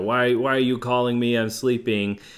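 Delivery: irritated, upset, loud yelling outburst. Telling a story about a man woken by a phone call, retelling an upset yell. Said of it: "he's yelling".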